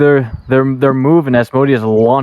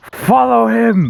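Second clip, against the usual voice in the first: mock, very high, rough roaring bellow; 9 semitones higher than usual. Jerry looks over at Asmodeus and calls out: Jerry bellowing. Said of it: "just bellows out".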